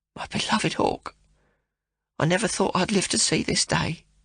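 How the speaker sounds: very quiet, almost whispered. Reading a novel aloud, the mother suddenly grows quiet: almost a whisper. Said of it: "speaks almost in a whisper".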